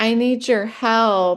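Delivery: acted crying, begging, tearful tone, drawn out. Retelling asking an ex-boyfriend for help: imitating own crying.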